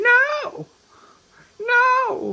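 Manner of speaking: very high, loud, anguished screaming.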